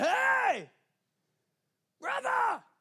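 mock very high, swooping shout. Retelling how a guy at the bottom of the road called out, imitating a shout. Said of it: "he shouts".

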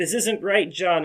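mock, high, desperate begging tone. Retelling a movie scene where she is pleading for her life: imitating someone pleading for her life. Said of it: "pleading for her life".

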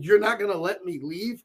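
ordinary talk

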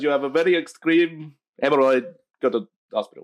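put-on foreign accent sliding into Russian. Retelling what a doctor said: imitating doctor's accent, drifting Russian. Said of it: "I think that went Russian there".

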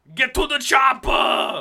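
high-pitched, slow, loud shout.

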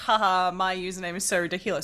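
ordinary delivery

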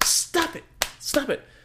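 very high, frantic, panicked freaking-out voice. Retelling how she yelled at him in the bleachers, retelling her yelling. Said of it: "yells at me in the bleachers like".

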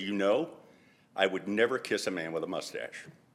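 soft, acted, dead-serious voice. A man recounts a woman tapping his shoulder when he was 25, imitating her most serious voice. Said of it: "in her most serious voice".

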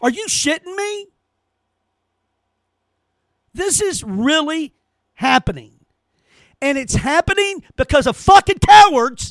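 furious, angry, screaming yelling. Speaker in the middle of a rant, screaming. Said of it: "I'm screaming".

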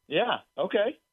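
excited.

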